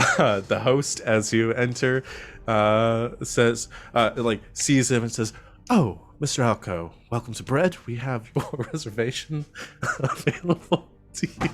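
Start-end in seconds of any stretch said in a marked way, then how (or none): 5.7-11.5 breaking into laughter while talking, higher. Voicing a restaurant host greeting guests, laughing while talking. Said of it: "I said I was gonna do that with a straight face".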